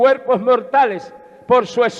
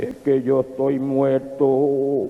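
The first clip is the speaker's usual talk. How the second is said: very low, deep, solemn, grave tone; 9 semitones lower, 4 dB quieter than usual. Telling a story, voicing the brother's reply when asked why he won't talk: deep grave voice. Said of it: "con una voz grave le dijo".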